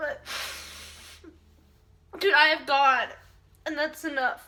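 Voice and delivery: speaking through tears. Speaker shares on Mother's Day while missing their mom, crying. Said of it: "I know I'm crying".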